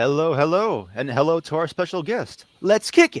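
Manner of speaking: high swooping game-character voice. Show host greeting a special guest, doing a PaRappa voice. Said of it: "doing a PaRappa voice line".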